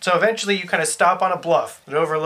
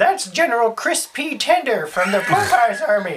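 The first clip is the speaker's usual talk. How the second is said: put-on old lady voice, higher pitch; 6 semitones higher than usual. Narrating a game, voicing the hermit old lady as she points to a rider, old lady voice. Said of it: "having rescued the Hermit [name], ... old lady".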